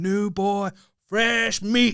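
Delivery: high voice, very slow and drawn out.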